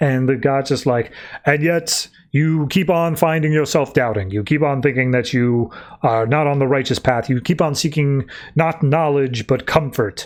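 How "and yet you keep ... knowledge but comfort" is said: ordinary delivery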